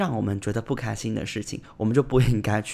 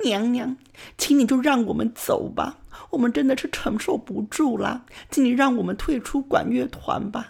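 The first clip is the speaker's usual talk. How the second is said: put-on very high-pitched sobbing, crying wail; 12 semitones higher than usual. Retelling kneeling before the band teacher with friends, imitating a crying voice. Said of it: "然后跟老师用哭腔说".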